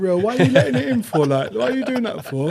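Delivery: high, choked-up, tearful crying voice. Retelling a childhood game against a brother: imitating own past crying. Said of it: "And I'd be crying".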